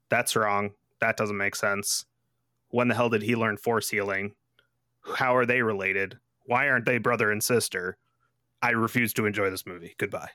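ordinary talk

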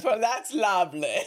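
put-on loud, booming, big English accent. Retelling what a man said in reply, in a booming english accent. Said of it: "in booming English accent".

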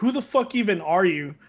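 mock, defensive comeback tone. Retelling an argument with a salty player, the speaker quotes his reply: imitating a defensive reply. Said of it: "he got all defensive".

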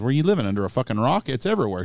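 light, put-on northern English accent. Retelling what an older shop owner said, imitating a northern accent. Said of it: "She had that northern accent kinda".

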